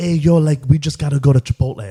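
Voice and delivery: put-on affected Miami accent. Teasing Bryce about the accent he has picked up, imitate him in Bryce's put-on Miami accent. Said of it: "Bryce has picked up the Miami accent".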